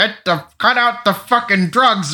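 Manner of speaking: high, drawn-out mock yell. Retelling a movie scene where he yells at Robert Downey Junior: imitating Ed yelling. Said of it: "he yells at Robert Downey Junior".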